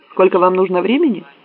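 sharp, pointed tone. A woman turns to a man she is holding there and asks: asked sharply. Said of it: "резко спросила".

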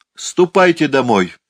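sudden, abrupt, high-pitched shouted outburst. Narrator reads a woman suddenly shouting at the laughing girls, sudden shout. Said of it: "вдруг крикнула миссис Бентли".

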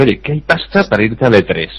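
ordinary talk

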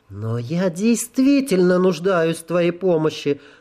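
sugary cooing voice. A goddess asks the narrator for his help, cooing. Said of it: "проворковала она".

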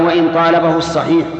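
usual speaking voice

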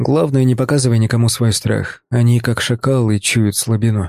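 plain reading voice

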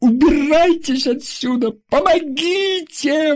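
sudden, piercing, very loud, very high shriek. Narrator reads a woman facing strangers who threaten her: screaming very loudly. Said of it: "вдруг закричала она таким громким голосом".

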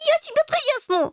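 very high-pitched squealing cry. Answering a companion's threat to hit him, he squeals back: squealing. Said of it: "завизжал Рыжий".

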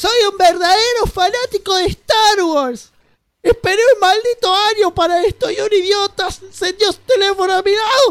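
shrill, very high-pitched ranting yell. Retelling what an irritated Star Wars fan yelled in the cinema, imitating an irritated fan yelling. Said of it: "lo que gritaba el chabón".

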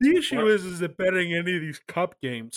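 words stretched out while yawning. Discussing bets on cup games, talking through a yawn. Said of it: "I'm just talking through a yawn".

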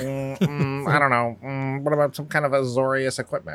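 put-on bored, uninterested voice.

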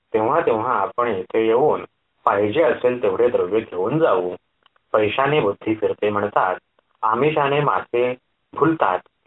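ordinary delivery, nothing marked

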